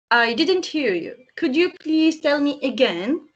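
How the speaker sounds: ordinary delivery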